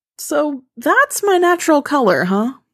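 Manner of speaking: voice cracking. Narrator reading a girl's line to Sam after being pushed into a room, voice cracking. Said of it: "Her voice cracks".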